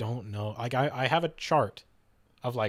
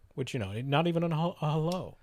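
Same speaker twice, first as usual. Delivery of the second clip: plain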